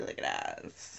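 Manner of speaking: mock, breathy, unvoiced whisper.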